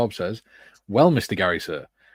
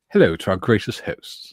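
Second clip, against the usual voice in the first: affected, put-on posh upper-class voice; 3 dB louder than usual. Voicing a greeting to the hosts in a put-on posh voice. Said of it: "in a posh voice or something".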